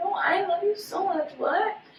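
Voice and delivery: mock tearful, high, soft pleading voice.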